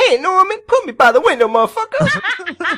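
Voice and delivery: very loud, high-pitched, slow, drawn-out yell.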